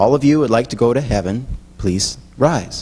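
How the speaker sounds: said quietly, at low volume. Telling a joke, acting the minister's line: imitating saying it quietly. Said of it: "the minister quietly says".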